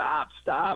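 high, screamed yell. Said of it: "you start screaming at him".

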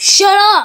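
loud, furious, angry yell.

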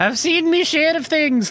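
very high, put-on leprechaun voice. Narrating a story and voicing a character in a leprechaun-like voice. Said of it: "Why do I sound like a leprechaun?".

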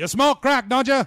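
very loud, high-pitched, yelling voice. Quoting the principal Joe Clark from Lean on Me: Morgan Freeman as Joe Clark yelling. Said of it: "like, yelling at".

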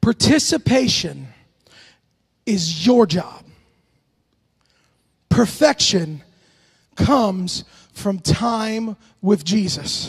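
slow, drawn-out, measured, deliberate delivery. Speaker sharing an important message with listeners, said slowly. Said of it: "I said that slowly".

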